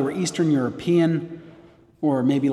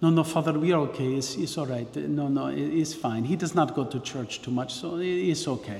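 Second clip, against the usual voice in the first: generic, put-on Eastern European accent; 6 dB quieter than usual. A priest quotes a mother and daughter answering him: generic Eastern European accent. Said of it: "making a generic Eastern European accent here".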